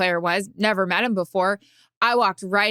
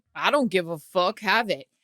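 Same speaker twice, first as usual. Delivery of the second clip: put-on darling tone. Retelling how the player handed over his ring: imitating David Ortiz saying it darlingly. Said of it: "in the most darling way".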